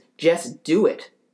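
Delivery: acted screaming. Retelling how a man got really close and screamed at the speaker, retelling a scream. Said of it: "gets really close to me and just screams".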